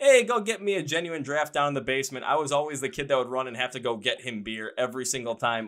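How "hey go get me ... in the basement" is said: put-on Wisconsin accent. Grandchild quoting grandpa's call from childhood memory, in a Wisconsin accent. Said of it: "you had to do the Wisconsin accent when you were doing it".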